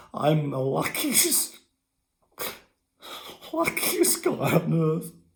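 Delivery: emotional, overcome voice with swooping pitch. Sharing one of the happiest days of his life with his audience, emotional. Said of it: "forgive me if I'm I'm emotional".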